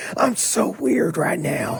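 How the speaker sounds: very slow, nervous, hushed whisper. Retelling a phone call from a friend parked outside: imitating Chris whispering. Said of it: "He's, like, whispering".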